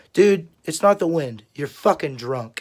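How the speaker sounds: normal talking voice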